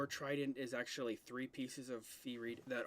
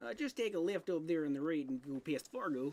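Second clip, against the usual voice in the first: Minnesotan put-on voice; 4 semitones higher, 6 dB louder than usual. A player in character giving the group directions, minnesota accent. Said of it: "the more Minnesota I sound".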